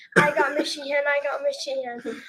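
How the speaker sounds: ordinary talk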